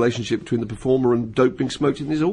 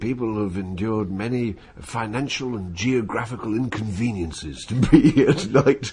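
put-on slow old-person voice. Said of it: "general, all-purpose James Mason, old person voice".

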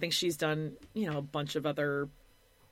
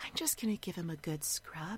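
soft, hushed ASMR voiceover whisper. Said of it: "she does, like, this voiceover".

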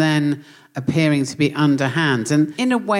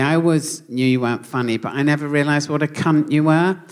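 plain

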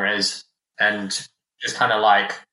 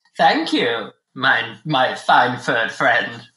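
put-on elderly, geriatric goblin character voice; 2 semitones higher than usual. A player thanks the other character while shuffling past him: old goblin voice. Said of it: "You're standing next to a geriatric goblin covered in blood down the side of his face. / old man, old goblin, / We're on police business." / (opening words) Hey there, fellow nerds and ne'er-do-wells".

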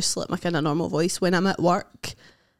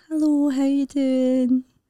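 put-on lady voice, much higher; 7 semitones higher than usual. Asked to do a character, speaker imitates their piano teacher, piano teacher lady voice. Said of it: "lady character".

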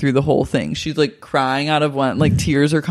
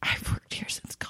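very quiet, hushed, ashamed whisper. Retelling what she said on reality television: imitating an ashamed whisper. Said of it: "she whispers in, like, an ashamed tone".

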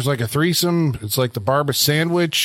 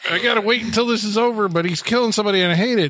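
put-on high, panicked, freaked-out fretting; 7 semitones higher than usual. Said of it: "just freaking out for, like, five minutes going".

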